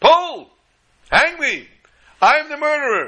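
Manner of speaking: slow, high, drawn-out put-on screamed outburst. Recounting what a man screamed to the hangman, retelling a scream. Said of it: "he screamed to the hangman".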